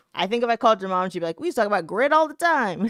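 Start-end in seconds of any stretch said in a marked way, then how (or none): 1.4-2.9 put-on Canadian accent. Imitating the other speaker's mom talking about grit: imitating a mom's accent. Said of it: "In that accent".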